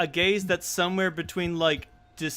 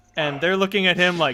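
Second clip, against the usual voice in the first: normal talking voice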